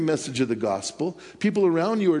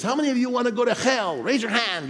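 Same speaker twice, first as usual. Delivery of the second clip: put-on thick, heavy Spanish accent, bold, pitched up; 8 semitones higher than usual. Retelling a man preaching to people on a train, imitating his heavy Spanish accent. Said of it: "he has this real heavy Spanish accent".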